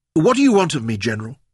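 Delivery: icy, cold, calm and composed. Narrator reads a woman with a pistol aimed at her addressing a general, cold and calm. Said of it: "her voice was cold and calm".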